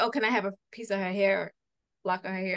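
ordinary talk, nothing marked

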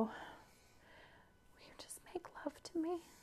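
very hushed, fast, breathy whisper. Retelling what she whispered to him, retelling a whisper. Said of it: "And I whisper to him".

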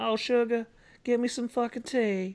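put-on very high southern drawl. Imagining Natalie Dormer in the part, the speaker voices her: Natalie Dormer southern accent. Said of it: "with like a southern accent".

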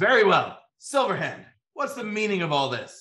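high, loud, carrying shout. Narrator voicing a character who shouts across the room, shouting across the room. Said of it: "He shouts across the room".

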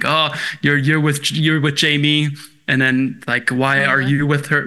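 plain

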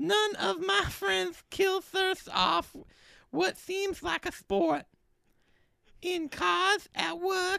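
put-on high lisping voice. Reading an ad script in a randomly drawn voice: Mike Tyson voice. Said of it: "Mike Tyson".

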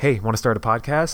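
normal talking voice

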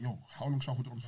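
hushed whisper. Speaker retells whispering to the man he holds in a sleeper: whispering. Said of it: "I'm whispering like".

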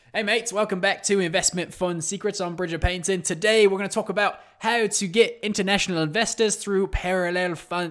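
put-on Australian accent. A podcast host opens the episode in a put-on aussie accent. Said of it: "I can't do this accent anymore".

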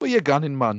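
put-on Geordie accent. Repeating another speaker's line back to him, in a put-on geordie accent. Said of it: "I do Geordie".

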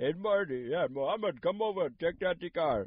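put-on Indian accent. Retelling a man calling someone over to check out the car, in an Indian accent. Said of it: "I got a different Indian voice for that one".

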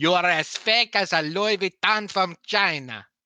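put-on thick Italian accent, very high, shrill, loud. Quoting a favourite one-liner to the others, in a thick Italian accent. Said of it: "just imagine it in a thick Italian accent".

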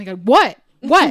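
put-on panicked voice. Retelling own reaction when dad rushed in: retelling own panic. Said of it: "I was panicked".

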